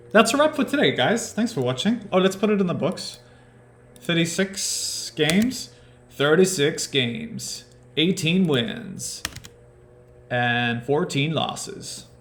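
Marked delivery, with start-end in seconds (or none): 2.2-12.1 terrible put-on American accent, pitched up. South african host wrapping up the video, in a terrible american accent. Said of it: "a terrible attempt at an American accent".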